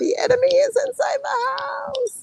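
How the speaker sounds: acted, very high, drawn-out screaming cry. Retelling what she kept saying about the enemy: imitating her own screaming. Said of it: "when I kept screaming".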